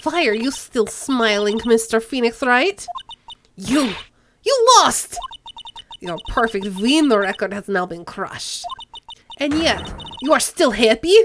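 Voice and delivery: put-on Russian accent. Voicing Franziska von Karma confronting Phoenix Wright: Russian accent as Franziska von Karma. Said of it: "I can't do a German accent, okay? So yeah, she's, she's from Russia instead".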